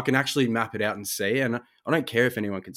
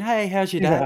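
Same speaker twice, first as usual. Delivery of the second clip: very high, put-on, fake-energy cheerful voice; 9 semitones higher, 5 dB louder than usual. Talking about everyone's drive-through and phone voices, the speaker demonstrates a fake-energy phone voice. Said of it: "we all got that fake energy".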